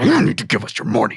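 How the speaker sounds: very deep, low-pitched villain voice. Asking viewers for donations at the end: Bowser voice. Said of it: "a Bowser voice".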